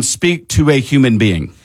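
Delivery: plain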